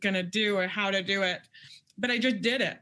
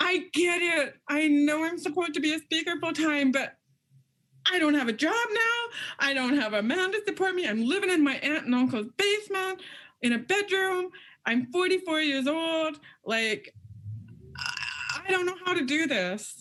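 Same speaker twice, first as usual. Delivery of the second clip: mock angry outburst, higher; 7 semitones higher than usual. Retelling an angry outburst from the past, imitating own past anger. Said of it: "I was so mad".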